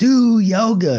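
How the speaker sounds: long, high-pitched yell.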